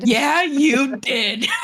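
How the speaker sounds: high, slow, drawn-out, laughing mock-mournful teasing.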